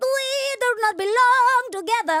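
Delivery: very high, slow, distinctive, drawn-out voice. Answering who to bring from Broadway, doing a Bernadette Peters impression. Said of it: "that's what she sounds like".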